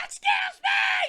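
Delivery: very high-pitched, very loud, obnoxious screech. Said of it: "she goes".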